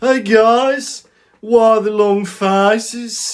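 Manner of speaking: very high, loud, squeaky put-on Brummie voice. Imagining the film's shrunken head with a Brummie accent. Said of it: "imagine a Brummie shrunken head".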